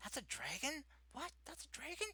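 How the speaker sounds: very high, half-whispered, disbelieving. Describing visitors meeting the friendly dragon, imitating people half-whispering. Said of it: "whispering like".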